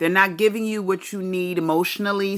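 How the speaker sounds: normal talking voice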